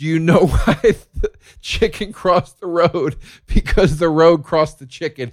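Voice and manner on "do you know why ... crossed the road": put-on called-out yell. Retelling calling out to someone walking away: retelling a yell. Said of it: "And I yelled".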